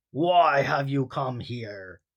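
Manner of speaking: rough, deep, gravelly rumbling voice. A hidden voice answers Ron's shout from the smoke: deep, gravelly rumbling voice. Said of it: "rumbled a deep, gravely voice".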